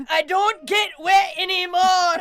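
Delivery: screamed, very loud, high put-on Scottish accent. Riffing on a vagina monologue, the speaker performs it in a Scottish accent. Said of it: "doing a vagina monologue in a Scottish accent".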